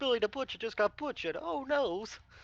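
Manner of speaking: mocking, taunting put-on voice. Taunting enemies from behind cover in character: taunting in character. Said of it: "while I'm taunting the crap out of him".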